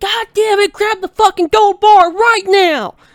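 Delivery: shrill, full-throated, frantic scream, high and loud. Retelling being grabbed in a game, imitating own screaming. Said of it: "I start screaming".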